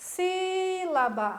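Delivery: first syllable sí of sílaba shouted loud and held. Teaching that the strong syllable gets shouted: first syllable sí shouted long. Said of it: "Como é que eu vou gritar a palavra sílaba? ... si é a sílaba".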